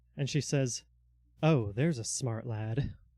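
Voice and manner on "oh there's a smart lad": with a slight smirk. A game master voices a woman answering a player who demands to be let go: smug, smirking. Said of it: "the slightest smirk cross her face".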